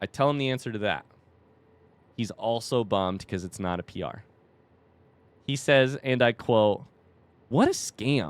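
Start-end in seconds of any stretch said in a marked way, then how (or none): 7.5-8.3 mock sore, upset, with some heat. Retelling a runner's upset complaint about his race result: imitating a heated complaint. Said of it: "some heat in his voice".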